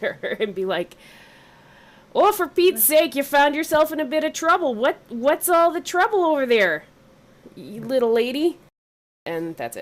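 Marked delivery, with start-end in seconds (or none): 2.1-8.6 high, yelled call-out, projected far. A character who won't come any closer calls out to her, yelling out. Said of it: "just gonna yell out to her".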